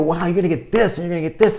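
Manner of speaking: very enthusiastic. Showing an overhyped way to pitch an offer: really excited. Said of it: "I might be really excited to go".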